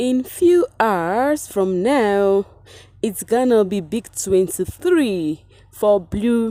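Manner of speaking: deliberately slow, drawn-out announcement with every word stretched.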